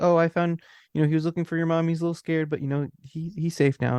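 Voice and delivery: gentle lady's voice. Telling a story about a woman met in a hotel elevator, imitating a soft-spoken woman. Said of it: "like very like soft spoken".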